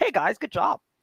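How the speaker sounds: stock encouraging guy voice. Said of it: "he's gonna be like".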